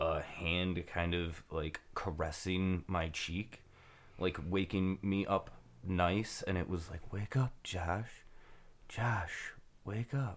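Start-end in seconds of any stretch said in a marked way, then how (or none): 7.1-10.4 gentle, otherworldly, ethereal whisper. Recounting being woken by a voice, the speaker imitates an ethereal female voice. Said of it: "a female ethereal voice talking to me".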